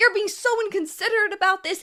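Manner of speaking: mock, high-pitched scream. Retelling an argument and acting out a woman screaming at them: imitating someone screaming. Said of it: "she's like screaming at me".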